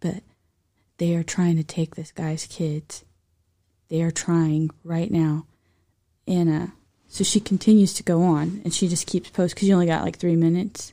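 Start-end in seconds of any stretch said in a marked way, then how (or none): 0.0-5.5 acted whispering. Retelling a nurse's TikTok video: imitating someone whispering. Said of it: "I have to whisper".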